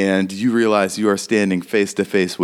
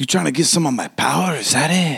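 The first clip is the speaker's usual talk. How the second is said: creepy character voice, higher; 7 semitones higher than usual. Voicing a creepy fella who confronts a visitor: creepy fella voice. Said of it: "regarding you creepily, waiting for you to talk".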